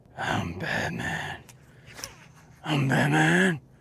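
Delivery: slow, airy, breathy whisper. Joking about talking whispery to viewers, whispery breathy Batman voice. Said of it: "talking to us all whispery and breathy".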